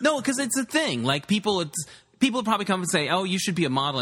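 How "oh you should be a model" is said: usual speaking voice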